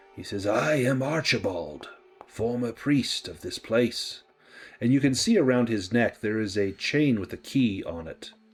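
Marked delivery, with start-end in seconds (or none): 0.5-4.2 put-on spirit whisper, slower. Voicing a spirit who turns and speaks to you: Archibald's dry whisper. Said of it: "whispers in a, a dry voice like pieces of parchment".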